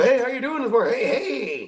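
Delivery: very high, sugar-sweet, overly nice voice. Describing people in a nice new place, acting out their greeting, put-on nice greeting voice. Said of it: "why did I make that voice?".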